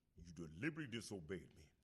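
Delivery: deep, put-on character voice. Doing an impression of a movie line in Mufasa voice. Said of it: "here's my impression of Mufasa".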